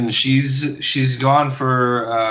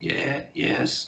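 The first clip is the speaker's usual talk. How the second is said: put-on elderly woman voice, quieter; 7 dB quieter than usual. Voicing an old tiefling woman greeting the players: old woman voice. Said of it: "a really old woman, uh, old tiefling".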